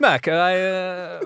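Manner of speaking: put-on Italian accent, impression style. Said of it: "you're really good at impressions".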